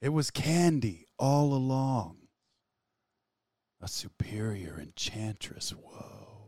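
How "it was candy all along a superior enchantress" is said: put-on calm movie-hero voice. A producer reads a pitched script aloud as requested, in Neo's voice. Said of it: "reads this in the voice of Neo".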